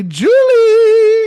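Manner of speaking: very high, loud, swooping, drawn-out sing-song call. Leading everyone in calling a name together: loud calling of a name. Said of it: "That was really loud".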